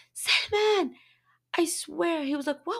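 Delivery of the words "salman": mock, very high, mild called-out voice. Retelling calling out to her husband in the kitchen, retelling a scream. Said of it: "I just screamed out".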